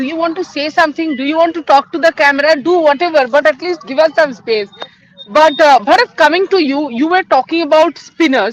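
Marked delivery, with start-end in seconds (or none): none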